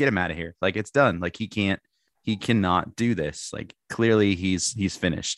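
plain

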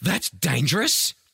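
gasping in shock, astonished tone. Reading a listener's story about a small child at work: shocked tone. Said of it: "In the most shocked tone I've ever heard from someone so small".

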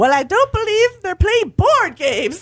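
very high-pitched, put-on Scottish accent. Reading out a quoted reply they wrote down, in a Mrs. Hughes Scottish accent. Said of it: "you're getting an impression".

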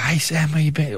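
put-on talking dog voice. Speaker voices their dog greeting them when they get home, in a put-on dog voice. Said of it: "I put the voice on".

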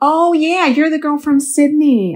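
terrible fake American accent, high pitched. Quoting someone's reaction on meeting, in a terrible fake american accent. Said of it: "I'm doing a terrible American accent".

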